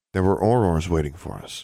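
ordinary delivery

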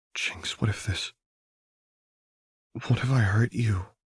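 unsteady, wavering, shaky, trembling voice. Narrator reads Lux's question to Jinx, shaky voice. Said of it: "Lux asked shakily".

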